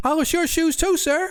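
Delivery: very high, put-on childlike voice. The narrator voices a shoe-polishing character addressing Zadkiel in a high-pitched childlike voice. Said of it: "he says in a high-pitched, childlike voice".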